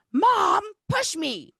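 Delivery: put-on shrill, very high-pitched yell of a small boy. Retelling a boy on a swing calling to his mom: imitating a child yelling. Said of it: "he's yelling at his mom to push him".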